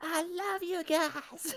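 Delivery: shouting in character. Playing a character who cheers at an ally: in-character yell. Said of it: "I yell".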